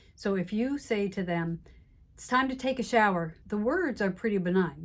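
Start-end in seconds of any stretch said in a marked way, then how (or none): 2.2-3.4 sharp tone with a hard edge, pitched up. Telling a parent it's time to take a shower, edgy tone. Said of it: "The tone of voice I use, though, has an edge to it".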